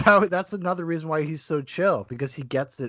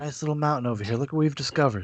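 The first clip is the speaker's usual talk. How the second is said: put-on soothing voice, quieter; 4 dB quieter than usual. Talking with others about a man who paints, imitate the painter's soothing voice. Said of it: "like his soothing voice".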